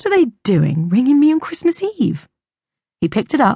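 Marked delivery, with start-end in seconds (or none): 0.0-2.3 surprised, taken aback, puzzled, pitched up. Narrator reads a man's reaction as his work phone rings on Christmas Eve: surprised.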